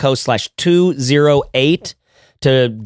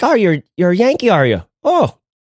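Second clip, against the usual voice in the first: put-on high-pitched, sing-song Irish accent; 5 semitones higher than usual. Retelling what an Irish guy in a bar said, in an Irish accent. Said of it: "the Irish guy in the bar, he was just like".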